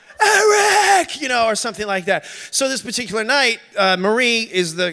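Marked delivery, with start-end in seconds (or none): 0.3-1.2 shrill, very high, loud drawn-out scream. Retelling how someone woke at night: imitating someone screaming. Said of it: "you would hear somebody scream out".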